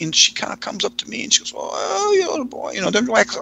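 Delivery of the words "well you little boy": put-on very high-pitched, slow, halting, struggling old-lady voice. Retelling an old lady's words to a young boy: imitating an old lady struggling to speak. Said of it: "it's hard for her to speak".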